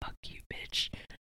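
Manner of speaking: muttered under the breath. Speaker retells what a co-star said on stage during Hello Dolly, muttered under his breath. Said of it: "he would like mutter under his breath".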